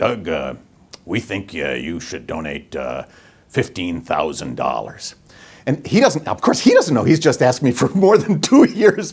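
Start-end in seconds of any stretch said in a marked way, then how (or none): 0.0-5.1 big, very low, deep bass delivery. Recalling a donation request, the speaker quotes Edison in his big bass voice. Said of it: "in his big bass voice".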